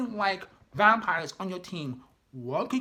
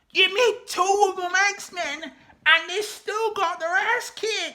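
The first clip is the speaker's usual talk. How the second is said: very high, loud yelling; 10 semitones higher, 5 dB louder than usual. Mid-rant about how a story's vampire fight went, yelling. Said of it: "I'm sorry for yelling".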